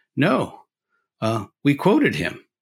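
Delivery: dead straight, no-joke, bone-dry delivery. Retelling a man's answer to a college student's question, retelling a deadpan reply. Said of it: "and Art Hoppe deadpan".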